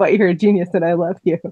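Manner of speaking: usual speaking voice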